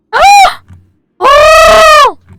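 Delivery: high, loud, squirrel-like squeak. Reacting to a Mickey Mouse waffle maker gift: high squeaky squeal. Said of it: "turned into an actual squirrel with that noise".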